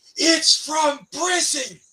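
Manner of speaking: put-on enraged yell, very high-pitched. Retelling a man who turned and yelled at him, retelling an angry yell. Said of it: "And he yelled at me".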